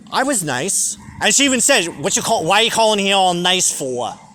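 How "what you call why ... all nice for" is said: put-on New York accent. Recalling a phone call with an ex-spouse, in a Staten Island accent. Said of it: "That fucking Staten Island accent".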